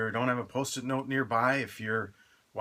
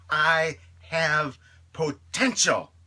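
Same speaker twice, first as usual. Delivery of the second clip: heartfelt, convincing, raised and passionate delivery; 6 semitones higher, 7 dB louder than usual. A speaker models the line for listeners to repeat, said with passion. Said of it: "Say it with passion".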